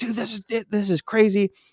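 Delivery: acted high, freaked-out, disbelieving voice. Telling a story, speaker acts out what his past self said, retelling freaking out. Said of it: "And I'm freaking out".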